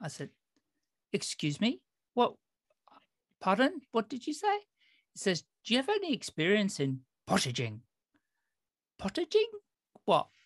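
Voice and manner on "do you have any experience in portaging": put-on Irish accent. Retelling what an Irish gentleman asked him, imitating an Irish accent. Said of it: "this gentleman was Irish".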